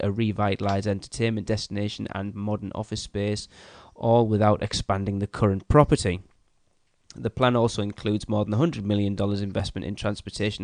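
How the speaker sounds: ordinary talk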